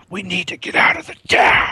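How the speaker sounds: stage whisper at talking volume. Imitating how Matt Dillon talks in a show: Matt Dillon loud whisper. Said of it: "he whispers very loud".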